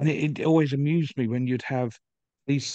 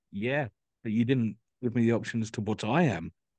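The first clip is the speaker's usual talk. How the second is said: put-on cantankerous, grumpy old man's griping voice; 2 semitones lower than usual. Retelling a british customer's reply to a sales trainer: imitating a grumpy old man. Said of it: "this grumpy old guy just going".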